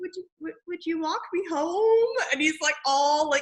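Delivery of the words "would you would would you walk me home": higher-pitched put-on cowed puppy voice. Retelling how Gage asks Buffy to walk him home, cowed little puppy. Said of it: "cowed little puppy".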